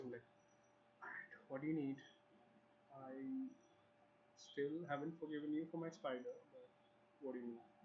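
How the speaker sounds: voice kept down, soft and confiding. Playing a story scene, answering someone who needs something, in a lowered voice. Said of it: "I lower my voice".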